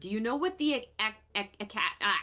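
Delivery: stammer stuck on the syllable ac, repeating it. Playing a character who dreamed of a giant lady, stuttering in character. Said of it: "I'm I'm stuttering in character".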